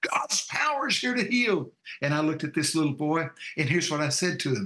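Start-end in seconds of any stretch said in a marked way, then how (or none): 0.1-1.7 mild preacher-like yell, pitched high. Retelling what was screamed in a meeting: retelling a scream. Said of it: "here's what I just got through screaming".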